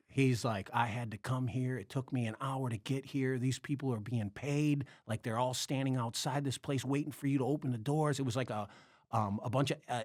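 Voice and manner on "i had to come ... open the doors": normal talking voice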